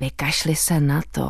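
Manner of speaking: whispering. Narrator reading a woman's words spoken into the listener's ear, whispering. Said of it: "zašeptali".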